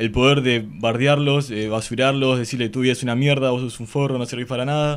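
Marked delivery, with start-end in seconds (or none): none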